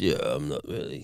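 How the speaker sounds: soft deep voice. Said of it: "he's got this deep voice".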